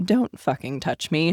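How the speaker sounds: low, hushed half-whisper. Retelling telling a man who bit the shoulder off: retelling a half-whisper. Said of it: "I just whisper down to him".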